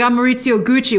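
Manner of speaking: plain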